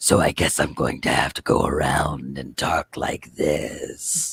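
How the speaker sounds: breathy, guttural, half-whispered low monster voice. Describing doing voices for a creature character, low guttural creature voice. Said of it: "talks in his low guttural voice".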